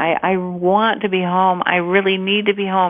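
mock crying in a boy voice. Speaker retells an eight-year-old's phone call wanting to come home, retelling a crying plea. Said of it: "He's just calling and crying and saying".

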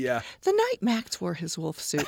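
cheery, sing-song, happy storytime teacher reading voice. Talking about reading books to students, speaker shows the happy teacher voice. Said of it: "I call it the happy teacher voice".

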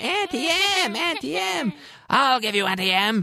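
very high, jeering, taunting put-on witch voice. Describing a film scene, speaker quotes the witch's taunt, imitating the Wicked Witch taunting. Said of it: "the Wicked Witch of the West taunting her".

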